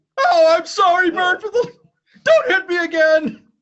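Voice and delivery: very high, very loud, drawn-out, pleading puppet voice. Retelling a Bert and Ernie sketch: Ernie voice. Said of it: "he makes Bert upset".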